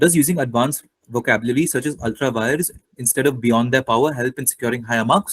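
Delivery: ordinary delivery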